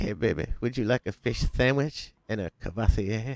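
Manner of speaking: seductive, flirtatious come-on tone. Retelling a movie scene, quoting the Ladies Man character: Ladies Man impression. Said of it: "The Ladies Man".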